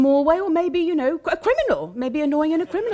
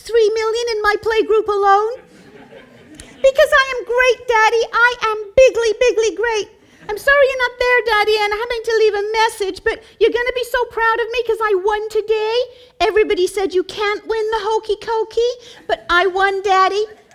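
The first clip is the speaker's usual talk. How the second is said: put-on bragging child voice, higher pitched; 9 semitones higher, 4 dB louder than usual. Picturing a scene where the child calls his daddy: imitating child Donald Trump. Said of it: "Picture the scene".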